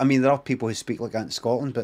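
normal talking voice

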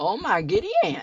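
giddy, excited, cracking, swooping voice. Streamer hoping to find diamonds in the game, voice cracking with excitement. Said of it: "My voice cracked".

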